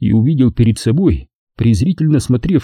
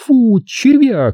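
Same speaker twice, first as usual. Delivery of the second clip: very high, scornful, contemptuous snorting delivery; 12 semitones higher than usual. A woman answers the man who abandoned her; contemptuous snort. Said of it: "презрительно фыркнула она".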